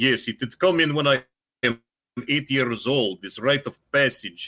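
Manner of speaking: put-on cliché Russian accent, coal-miner voice. Retelling what a Russian exchange student said: imitating a friend's Russian accent. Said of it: "that's exactly how he sounded".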